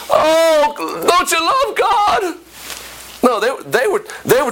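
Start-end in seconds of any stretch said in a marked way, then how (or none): 0.1-2.4 mock pleading voice, high-pitched and slow. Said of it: "the pastor begging".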